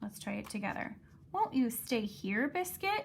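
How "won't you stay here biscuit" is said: question-like tune rising at the end on Biscuit. Reading a picture book aloud together, showing rising question intonation. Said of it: "a question with a higher voice at the end".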